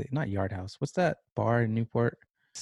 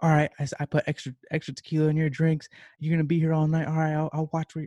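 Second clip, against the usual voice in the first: mock screaming, much higher pitch; 6 semitones higher than usual. Retelling how a woman reacted after seeing a small tip, imitating someone screaming. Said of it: "She starts screaming like".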